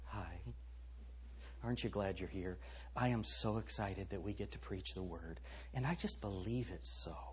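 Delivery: gentle, breathy, soft-spoken hushed whisper. Mocking how every man is now supposed to talk, speaking softly. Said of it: "begin speaking softly".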